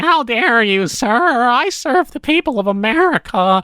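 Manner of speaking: high-pitched, slow, whiny nerd voice. Mocking a politician's words in Congress: Elliott Abrams whiny nerd voice. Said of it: "do his, like, whiny nerd voice in Congress".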